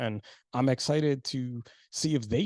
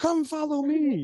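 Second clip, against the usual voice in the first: very high, loud, eager and excited call; 6 dB louder than usual. Retelling how Declan jumped out of the van, imitating Declan's call. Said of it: "and he's like".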